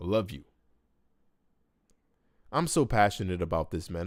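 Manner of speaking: sounding like crying. Speaker going live, talking about his longtime friend, sounding like he's crying. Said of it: "sounding like I'm crying".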